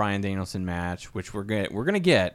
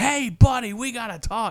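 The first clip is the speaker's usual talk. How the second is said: very high, shrill put-on voice, called out; 13 semitones higher, 5 dB louder than usual. Retelling an insane wrestling promo to another speaker: imitating MJF. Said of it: "he's like".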